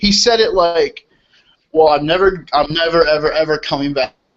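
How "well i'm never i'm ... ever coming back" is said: put-on wry, tongue-in-cheek, sarcastic insistence. Retelling to co-hosts what a man said, in a mock-sarcastic retelling. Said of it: "he said that kind of sarcastically".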